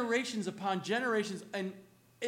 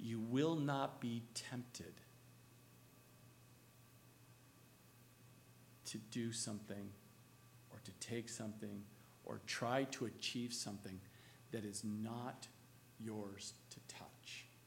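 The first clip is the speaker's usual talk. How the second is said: very slow, deliberate, quieter; 10 semitones lower, 13 dB quieter than usual. Speaking to listeners so the words sink into their minds, very slow. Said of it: "I try to say that as slow as possible".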